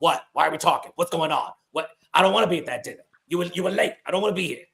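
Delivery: put-on energetic Bronx cab-driver voice and accent. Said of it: "The D M X, D M X voice".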